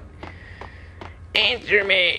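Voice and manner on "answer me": high, mock Italian mafia yell. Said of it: "that's what he would sound like".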